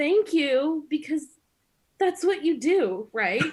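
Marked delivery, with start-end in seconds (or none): 0.0-0.9 put-on yelled-out delivery, two voices together. Retelling how the speaker and a friend answered a shouted invite, retelling a yelled thank-you. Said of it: "my friend and I both yelled out".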